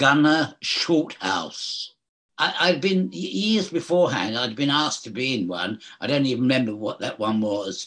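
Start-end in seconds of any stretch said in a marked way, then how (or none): 0.0-1.9 very slow, each word stretched out. Actor announcing the title of his character, said very slowly. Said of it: "I'll say this very slowly".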